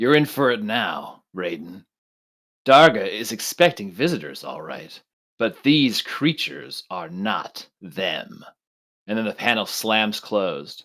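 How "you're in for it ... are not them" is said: rough, gravelly voice. Game master voicing a figure behind a door speaking to the party, gravelly voice. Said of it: "A gravelly voice echoes from within the doors".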